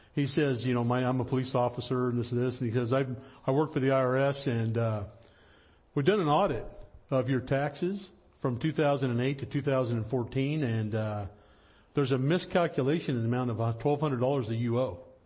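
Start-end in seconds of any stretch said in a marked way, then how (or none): none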